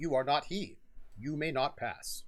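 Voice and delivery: speaking in a put-on golem voice. Voicing the golem as Sir Bartlett pulls his sword out: golem voice. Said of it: "And it's like".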